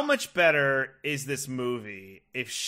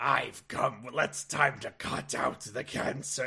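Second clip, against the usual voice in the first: weird put-on gravelly, rough male voice; 7 dB quieter than usual. Recapping a movie, quoting the thing that speaks, in a weird gravelly male voice. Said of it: "a weird, gravelly male voice".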